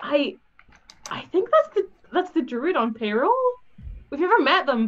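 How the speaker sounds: loud, high stage whisper, swooping in pitch. Leaning toward Alan, a player speaks in a loud stage whisper. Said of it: "really loudly stage whisper to Alan".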